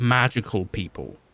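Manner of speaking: ordinary delivery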